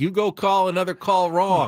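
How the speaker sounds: mock jeering holler, high and drawn-out. Imitating a manager yelling at an umpire in the dugout: imitating Andy Green yelling. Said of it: "Andy Green yelling".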